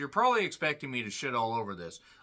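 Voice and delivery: ordinary talk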